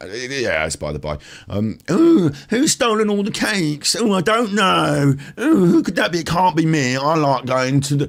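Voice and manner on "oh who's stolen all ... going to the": very high-pitched put-on rock-star voice. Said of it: "she talked like [name]".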